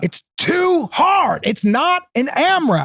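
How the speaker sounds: put-on, high, pissed-off angry yell. Retelling a workout where the man leading it got pissed, retelling an angry yell. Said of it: "I shouldn't have yelled".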